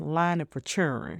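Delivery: thick, overdone, exaggerated Southern American drawl. Delivering a line in one's most southern voice: exaggerated southern accent. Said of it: "I say it in my most southern voice".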